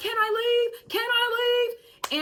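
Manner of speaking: put-on very high, drawn-out furious shouting. Recounting a man yelling at the general manager: retelling a man yelling. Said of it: "Now he's yelling at my general manager".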